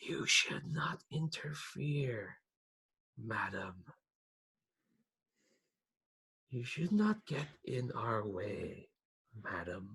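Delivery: slow, otherworldly choir voice in perfect pitch. Voicing a spirit that latches onto a character: otherworldly choir-like voice. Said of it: "it's like a choir talking to you".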